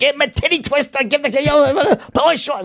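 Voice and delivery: high, vicious, mock heckling tone. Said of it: "my ex-wife was just as bad".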